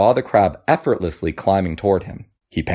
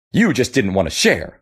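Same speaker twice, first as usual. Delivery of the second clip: spitting the words out; 3 semitones higher than usual. Reading a fable, the monkey accuses the crab: spitting the words. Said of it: "the monkey spat".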